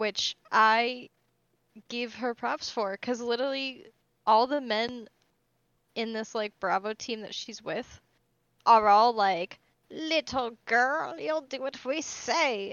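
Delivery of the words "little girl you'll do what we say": put-on voice of an old woman. Voicing the men on her Bravo team talking down to her, in an elder lady voice. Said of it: "an elder lady voice".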